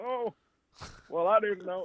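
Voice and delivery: put-on very old man voice. Retelling a man's reply after being told what he had taken, old man voice. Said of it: "in like an old old man voice".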